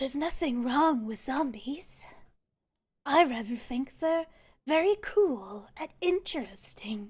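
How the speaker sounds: rough, rasping woman's voice. A voice speaks to the players in a raspy feminine voice. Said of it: "You hear this sort of raspy, uh, feminine voice".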